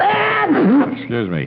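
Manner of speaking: high, drawn-out sneezing "excuse me". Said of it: "I can't stop sneezing".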